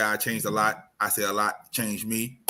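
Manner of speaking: usual speaking voice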